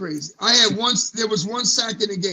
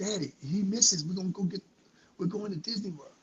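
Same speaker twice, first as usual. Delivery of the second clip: soft, hushed stage half-whisper; 8 dB quieter than usual. Retelling what he half-whispered to his father behind the bench: retelling a half-whisper. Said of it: "and I whispered to him".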